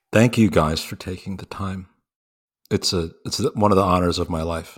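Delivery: somber, serious, solemn tone. A guest thanks the hosts as the conversation ends, somber. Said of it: "You said that very somberly".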